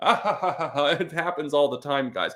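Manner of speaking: slow, put-on words through forced laughter. Repeating a speaker's claim back mockingly: imitating a fake laugh while talking. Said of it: "Fake laugh with me".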